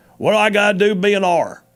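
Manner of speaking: put-on real country accent. Retelling a phone call from a caller who wanted to run: real country sound. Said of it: "had real country sound".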